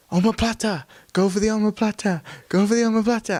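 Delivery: put-on high-pitched shouting in a Welsh accent. Recalling an amateur MMA event, imitating Chris Reese shouting in a Welsh accent. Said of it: "I can hear Chris Reese shouting".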